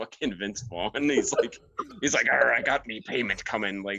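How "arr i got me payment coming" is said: stock movie-pirate voice, starting with "arr". Retelling Pirate Steve's introduction in the movie: Pirate Steve voice. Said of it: "Pirate Steve's introduction is he".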